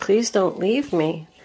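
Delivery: mock pleading, begging voice. Acting out a partner during a card reading: imitating someone begging.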